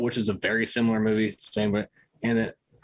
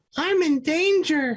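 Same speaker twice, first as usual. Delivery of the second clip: put-on very high, squeaky, badly done cartoon child voice; 4 dB louder than usual. Answering a request to do a Simpsons character: terrible Ralph Wiggum impression. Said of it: "It was terrible".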